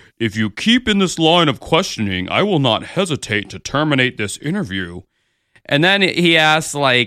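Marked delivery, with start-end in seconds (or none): 0.2-5.0 sassy, deep, low, digitally altered electronic voice. Retelling an interviewee's threat to end an interview: imitating sassy deep voice. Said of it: "his little sassy, like, deep voice".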